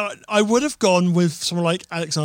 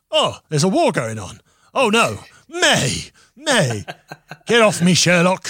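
slow, drawn-out voiceover delivery with swooping pitch; 3 dB louder than usual. Imagining the film Warhorse voiced for a joke: Alexander Armstrong voice. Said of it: "Alexander Armstrong doing the voice".

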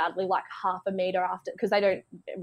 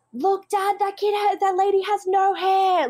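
mock child shouting, much higher and slower; 12 semitones higher, 5 dB louder than usual. Retelling a kid in the shops yelling out to his dad, imitating a kid shouting. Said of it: "like the loudest he possibly could".

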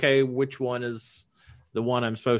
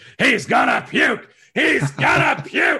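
very high-pitched, loud hollering; 13 semitones higher, 7 dB louder than usual. Showing how you hone in on your impression, do a Vince impression, yelling. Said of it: "That's how I hone in on my Vince impression".

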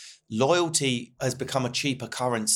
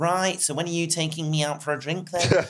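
put-on older northern woman voice, pitched up; 5 semitones higher than usual. Retelling a woman's phone call after some DMs, in a northern nana voice. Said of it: "like some northern nana".

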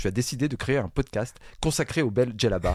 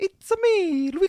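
put-on Italian accent, very high-pitched voice. Describing someone pretending to speak Italian, then demonstrating it: fake Italian accent. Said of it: "avec l'accent italien".

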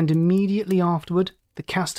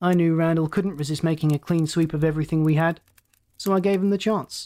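plain reading voice

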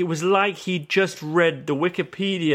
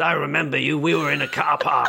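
put-on gravelly voice. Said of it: "he had a gravelly voice".

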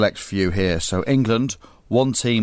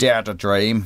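Northern Irish accent with a menacing, threatening sound. Mocking a national slogan by saying it in a threatening northern irish accent. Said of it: "if you say it in a Northern Irish accent".

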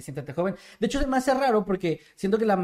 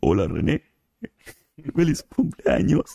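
robotic text-to-speech voice, lower; 3 semitones lower, 4 dB louder than usual. Answering a viewer's request for a birthday greeting in Loquendo voice. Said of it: "te sale bien".

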